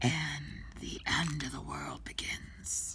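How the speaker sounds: put-on hushed, drawn-out edgy voice. While filming a painting session, speaker tries out an edgy voice. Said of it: "I'm trying an edgy voice".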